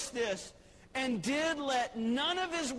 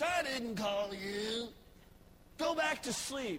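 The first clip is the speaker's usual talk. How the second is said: mock cranky, grouchy, put-out voice. Retelling a story, the speaker voices Eli's reply as asked: Eli's grumpy voice. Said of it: "Do it in your grumpy voice".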